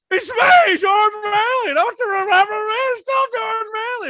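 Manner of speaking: put-on very high, drunk-sounding. Retelling a movie scene, imitating George Bailey sounding drunk. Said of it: "your George Bailey, each impression, sounds like he's six bourbons deep".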